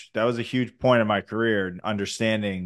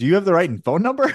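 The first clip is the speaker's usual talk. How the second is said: sarcastic, pitched-up delivery; 8 semitones higher, 4 dB louder than usual. Retelling a call about being drafted, acting out own sarcastic reply. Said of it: "the sarcastic side of me was just like".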